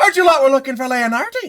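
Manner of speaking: loud, high calling voice. A stranger suddenly speaks up from behind two characters, not particularly soft voice. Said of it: "at a not particularly soft volume".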